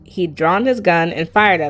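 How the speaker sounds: plain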